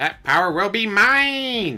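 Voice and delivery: high, loud, swooping villain voice, "mine" stretched out. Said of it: "Talk like Skeletor".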